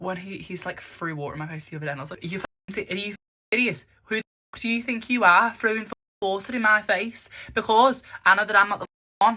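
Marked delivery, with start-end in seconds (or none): 2.2-9.4 put-on Scouse accent on every word, loud, high. Retelling the reaction when someone threw water in the speaker's face, put-on scouse accent. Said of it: "we'll put a Scouse accent on".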